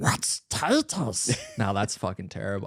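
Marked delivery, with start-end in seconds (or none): 0.0-1.4 put-on fantasy creature voice. Asked to have another crack at a Gollum impression: Gollum voice. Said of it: "Do you want another crack at Gollum?".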